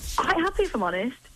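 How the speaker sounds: sounding really surprised. A caller on the phone answers how she is: sounding really surprised. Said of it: "you sound really surprised".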